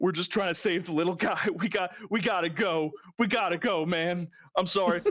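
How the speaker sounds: tearing-up, emotional voice. Describing a man holding Mike, speaker is imitating a man tearing up. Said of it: "like tearing up himself a little bit".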